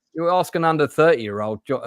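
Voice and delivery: ordinary talk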